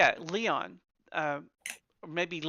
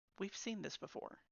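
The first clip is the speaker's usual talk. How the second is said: hushed whisper, under the breath; 3 semitones higher, 16 dB quieter than usual. Roleplaying Toady, pointing at a corpse so Unit seven won't overhear, talking under his breath. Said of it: "he's talking under his breath".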